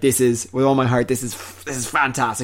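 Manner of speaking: plain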